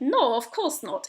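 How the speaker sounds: put-on poor Bulgarian accent. Retelling a conversation, the speaker quotes a man's answer in a bad Bulgarian accent. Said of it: "Excuse my bad Bulgarian accent".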